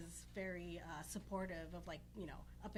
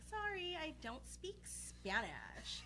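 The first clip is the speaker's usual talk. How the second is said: very high, swooping put-on valley girl drawl; 9 semitones higher than usual. Changing voice tone so people believe no Spanish is spoken: full Valley Girl voice. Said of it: "change the tone of my voice / You went full Valley Girl. / Yes, exactly".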